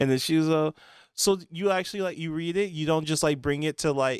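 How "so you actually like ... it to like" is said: ordinary delivery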